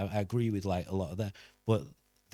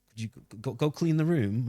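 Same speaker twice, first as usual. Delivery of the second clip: mock awkward, uncomfortable manner; 2 semitones higher than usual. Retelling how someone asked a girl to clean: imitating an uncomfortable request. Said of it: "he just was uncomfy with her".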